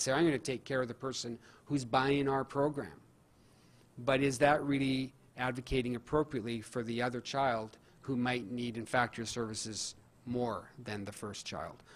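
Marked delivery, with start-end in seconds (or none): none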